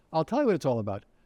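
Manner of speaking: plain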